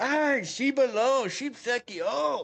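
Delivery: put-on Korean speech. Retelling how the cab driver started cussing in Korean: imitating a driver cussing in Korean. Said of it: "starts cussing me in Korean".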